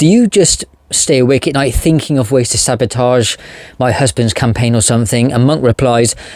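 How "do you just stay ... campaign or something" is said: normal talking voice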